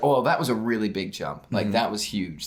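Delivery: ordinary talk, nothing marked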